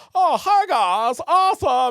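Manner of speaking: very high, loud, shrill goofball voice. Recalling being a goober on set, doing the goofy fun character voice. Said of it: "really fun character being like".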